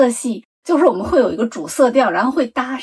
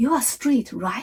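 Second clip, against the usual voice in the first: hushed, quick, careful and nervous; 6 dB quieter than usual. Retelling how a man, seeing the speaker hesitate over an option, asked: retelling a cautious question. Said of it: "他就小心翼翼地看着我的脸说".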